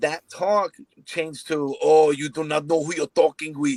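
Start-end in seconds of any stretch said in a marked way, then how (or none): 1.8-3.8 put-on Russian accent. Retelling a phone call with a man, the speaker quotes him, Drago impression. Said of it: "Then he sounded like Drago".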